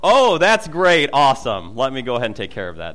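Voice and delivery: loud, swooping, heavily sarcastic mock biting tone. Recounting their reaction about the pool, the speaker is retelling their own sarcastic reply. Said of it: "My response was more of a sarcastic response to that".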